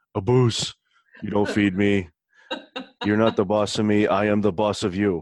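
put-on dog voice. Speaking for the dog, who claims it isn't fed, in a dog voice. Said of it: "dog voice".

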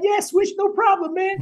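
real high-pitched, very high, easygoing voice. Retelling a man agreeing to sign something for him, in a real high voice. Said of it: "he got that real high voice".

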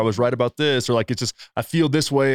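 ordinary talk

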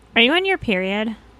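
put-on valley girl way of talking. Voicing the question they have to ask her, valley girl voice. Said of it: "That's like that's using the valley girl voice in vain".

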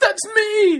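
hurt, very high, very loud crying wail. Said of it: "And she was all upset".

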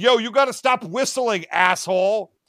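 mock hostile, fed-up, aggressively angry scolding. Retelling cartoon characters yelling at a beaver: imitating aggressive anger. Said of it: "aggressively angry at this beaver".

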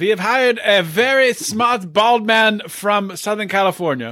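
high, put-on German accent. Doing a mock Taliban ad on a podcast, fake German-sounding accent. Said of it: "What the fuck was that accent?".

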